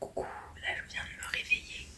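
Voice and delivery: hushed, whispered delivery. Just woken up, whispering because her parents are still asleep. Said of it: "je suis obligée de chuchoter".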